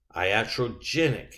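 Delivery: iatrogenic with emphasis on gen. Going through a pronunciation list of terms, stressing gen in iatrogenic. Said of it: "emphasis on the gin part".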